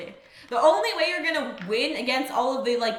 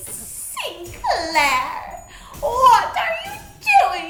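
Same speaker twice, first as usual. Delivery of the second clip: put-on loud shriek, English accent; 11 semitones higher, 7 dB louder than usual. Retelling how Cromer's ghost freaks out at Sinclair, English Cromer impression. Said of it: "This is my Cromer impression".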